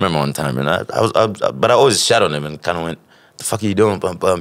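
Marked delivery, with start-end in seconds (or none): 3.4-4.4 condescending, high-and-mighty tone, higher. Retelling how he scolded his cousin for smoking: imitating his own high-and-mighty tone. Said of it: "acting all high and mighty on his ass".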